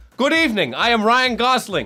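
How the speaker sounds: put-on loud, very high-pitched voice with a German accent. Quoting an impostor's award acceptance speech in a German accent. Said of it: "in a clearly a German accent".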